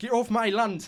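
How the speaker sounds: put-on rural English giant accent. Explaining the go-to giant accent in a film, doing a Hagrid giant accent. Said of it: "That that is the go-to giant accent".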